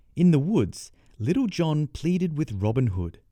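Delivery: plain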